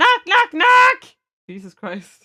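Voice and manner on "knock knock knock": yelling the words knock knock. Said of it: "if she keeps yelling".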